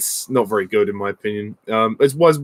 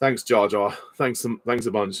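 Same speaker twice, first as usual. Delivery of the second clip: usual speaking voice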